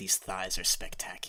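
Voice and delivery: quiet, hushed, private muttering. Voicing a dwarvish woman patting someone's leg: speaking very quietly to herself. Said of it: "says to herself in dwarvish".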